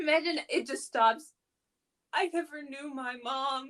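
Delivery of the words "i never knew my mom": put-on pained, hurt-sounding voice. Cracking a joke while reading out a message, in a mock-pained voice. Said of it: "[pained voice]".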